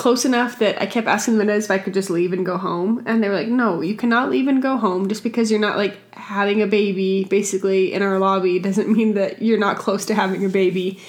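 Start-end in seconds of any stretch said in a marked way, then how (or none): none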